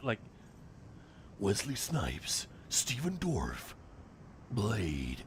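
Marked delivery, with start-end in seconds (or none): 1.4-5.2 put-on American accent, swooping American r in "Dorff". Showing the other speaker how to say the cast line, americanized r sound. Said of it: "You gotta Americanize the R in dwarf".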